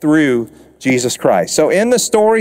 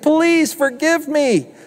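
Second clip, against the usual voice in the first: desperate, high-pitched begging, pleading tone; 12 semitones higher than usual. Speaker retells a story of a servant begging his master, acting out a servant's pleading. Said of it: "he begs, he pleads, he gets on his knees and he says".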